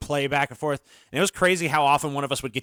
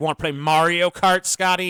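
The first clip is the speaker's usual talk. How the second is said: high, loud, mocking, needling taunt; 5 semitones higher, 6 dB louder than usual. Speaker imitates his friend's wife taunting the friend, in a put-on mocking voice. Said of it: "in like this mocking voice".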